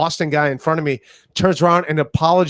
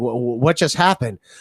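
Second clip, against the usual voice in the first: put-on confused voice, lower pitched; 4 semitones lower than usual. Retelling how a confused guy reacted after water was poured on him: imitating a confused guy. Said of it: "he's confused".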